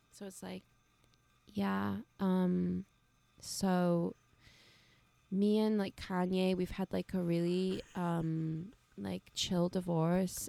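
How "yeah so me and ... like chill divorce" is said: relaxed, unbothered, zen celebrity voice. Doing a requested impression, relaxed and zen: Kim Kardashian impression. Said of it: "you do a great Kim impression".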